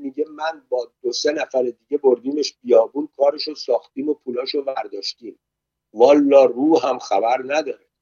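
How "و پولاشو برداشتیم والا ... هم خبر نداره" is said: ordinary delivery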